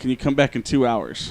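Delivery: plain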